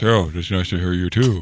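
very deep, mechanical voice-changer voice. Joking about a man's voice on his phone, mimicking a Darth Vader voice changer. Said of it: "one of those Darth Vader voice changer boxes".

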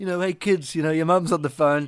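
put-on fumbling, clumsy English accent. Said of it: "I was going to try and do a [name] accent".

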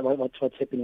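normal talking voice

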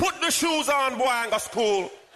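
put-on Jamaican accent, very high-pitched. Retelling what the woman who bought him the shoes told him: Jamaican accent. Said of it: "in her Jamaican accent".

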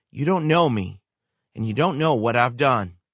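cold, icy delivery. Retelling a man's reply to a pastor: imitating a cold tone. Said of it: "said with a cold tone".

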